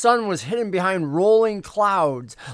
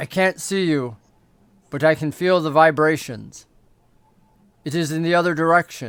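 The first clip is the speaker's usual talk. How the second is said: almost synthetic, inhuman, machine-like voice; 3 semitones lower than usual. Game master voicing a second unseen voice that responds, artificial-sounding voice. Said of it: "seems almost artificial as it responds".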